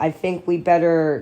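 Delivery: plain reading voice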